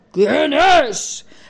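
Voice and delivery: huge, big booming voice. Narrator reads the voice answering the knock from inside, big booming voice. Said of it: "Preguntó un vozarrón desde dentro".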